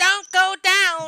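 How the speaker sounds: shrill gnome cry, very high and loud. The gnome runs out from his hiding spot to touch another character: gnome voice. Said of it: "That's a pretty good gnome voice".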